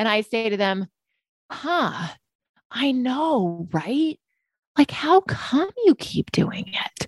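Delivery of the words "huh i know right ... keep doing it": curious, gently wondering, pitched-up, drawn-out tone. Showing a reply to a client: curious tone. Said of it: "even using that tone of voice".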